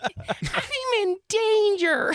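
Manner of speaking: put-on very high, little-boy voice. Asked who else they can do, a speaker gives a Ralph Wiggum impression. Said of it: "I know for a fact I can do Ralph Wiggum".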